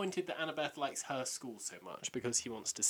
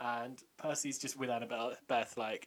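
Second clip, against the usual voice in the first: normal talking voice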